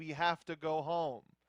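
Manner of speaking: ordinary talk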